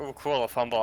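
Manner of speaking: ordinary talk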